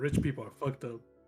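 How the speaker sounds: rushed, quick, low, swallowed mumble. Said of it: "That's just gonna mumble, like, real quick".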